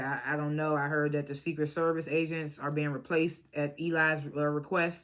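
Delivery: normal talking voice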